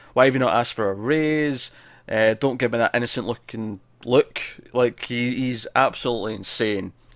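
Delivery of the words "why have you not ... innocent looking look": ordinary talk, nothing marked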